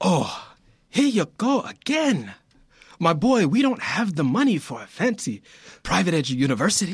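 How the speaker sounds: failed put-on Italian accent, sounding Nigerian. Reading a father's line to his son in a scene: attempted Italian accent. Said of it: "I'm trying to do this accent, dude, and I sound like I'm Nigerian, not Italian".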